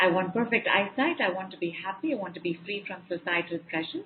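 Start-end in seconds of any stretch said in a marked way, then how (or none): none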